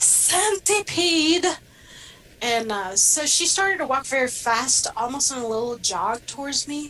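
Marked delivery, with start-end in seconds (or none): 0.0-1.4 mock blurted high yell, a touch too loud. Retelling his reply to someone calling from the kitchen, shouting a little too loud. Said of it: "probably a little too loud".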